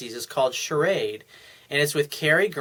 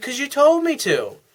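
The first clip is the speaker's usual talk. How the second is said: very high, lifted-up, plain voice; 12 semitones higher, 4 dB louder than usual. Retelling a couple's exchange, the speaker voices her reply in a high-pitched tone. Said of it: "she says in his high pitched tone".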